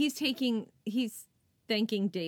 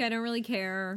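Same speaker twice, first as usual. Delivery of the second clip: ordinary delivery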